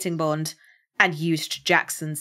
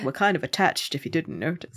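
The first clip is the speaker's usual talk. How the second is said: ordinary talk, nothing marked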